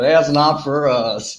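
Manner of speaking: put-on, mock Texas accent. Echoing the other speaker's joke line: put-on Texas accent. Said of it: "the Texas accent".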